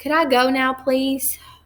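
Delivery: fed-up, exasperated, impatient tone. A narrator reads Emery asking the soldier if she can go; impatient. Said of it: "she asked impatiently".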